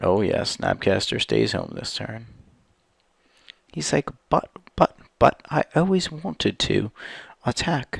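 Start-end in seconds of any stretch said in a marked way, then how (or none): 4.3-8.0 put-on posh British accent, raised pitch. Voicing a card that stays home this turn: Snapcaster Mage fancy British accent. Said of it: "all fancy with a British accent now".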